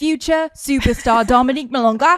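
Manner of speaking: loud put-on Australian accent with big build-up. Jokingly praising a nineteen-year-old player: put-on australian accent. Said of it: "we're doing it in an Australian accent".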